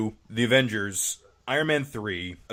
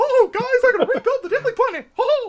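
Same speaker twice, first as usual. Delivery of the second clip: very high, loud, squeaky cartoon voice; 8 dB louder than usual. Imagining Superman promising to rebuild the Daily Planet, in a Mickey Mouse impression. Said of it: "obvious Mickey Mouse impression".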